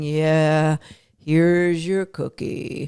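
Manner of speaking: low, flat, listless drawl, very slow and drawn out. Showing an unexcited way to present a piece of food: Eeyore voice. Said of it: "Eeyore going".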